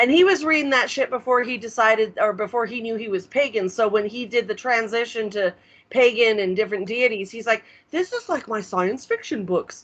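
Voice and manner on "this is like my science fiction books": dorky, nerdy put-on voice. Quoting him on switching to pagan deities: nerd voice. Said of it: "that's my nerd voice for him".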